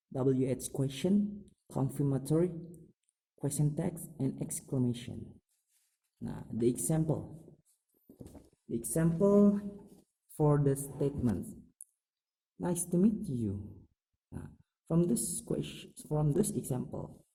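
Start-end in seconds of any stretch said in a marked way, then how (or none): 12.6-13.6 statement-like falling tune on final word you. English intonation lesson, example statement: falling intonation at the end. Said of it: "I said at the end of the sentence, the intonation is falling".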